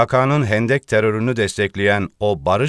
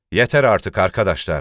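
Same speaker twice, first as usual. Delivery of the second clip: ordinary delivery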